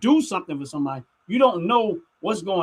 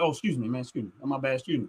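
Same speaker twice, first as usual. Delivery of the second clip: put-on breezy, unbothered, casual, offhand delivery; 7 semitones lower, 8 dB quieter than usual. Retelling slipping past someone in an alleyway: retelling acting nonchalant. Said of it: "I'm nonchalant".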